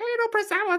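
very high, squeaky voice-modulator sound.

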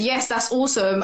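ordinary talk, nothing marked

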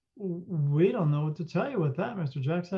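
normal talking voice

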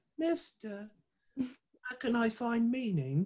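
tiny, very high little small-person voice. Imagining a small person coming up to ask him something, small person voice. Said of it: "I just imagine a small person coming up to me".

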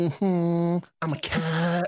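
very slow, swaggering, strutting cat voice. Acting out a cat walking into a sandbox: voicing a strutting cat. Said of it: "cat walks in".

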